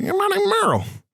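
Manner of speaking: very high-pitched voice. Describing how a man named Merle talks, imitating Merle's high voice. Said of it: "He got a high-pitched voice".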